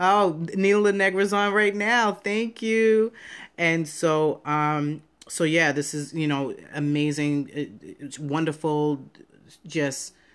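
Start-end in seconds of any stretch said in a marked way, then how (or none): 7.5-10.1 stuttering, stammering speech. Thanking someone who is on right now: stuttering. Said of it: "I'm stuttering now".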